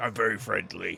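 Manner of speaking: loud booming voice. Reassuring a frightened little boy in character: booming voice. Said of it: "the boom of your voice".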